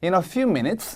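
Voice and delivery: few stressed, said slowly, rise on minutes.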